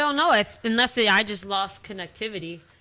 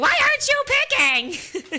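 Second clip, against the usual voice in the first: mock, very high-pitched, exasperated, frustrated screaming; 4 dB louder than usual. Apologizing to another drafter for yelling, reenacting screaming at him. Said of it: "so I'm screaming at you".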